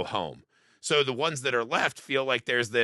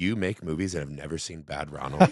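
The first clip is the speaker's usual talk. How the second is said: scolding tone, lower pitch; 8 semitones lower than usual. Retelling how mom reacted to never seeing a movie: imitating mom shaming. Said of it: "She's shaming you".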